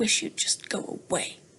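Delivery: breathy, whispered hiss under the breath. Narrator reads a princess in bed speaking to the frog in the darkness, hissed. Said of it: "she hissed into the darkness".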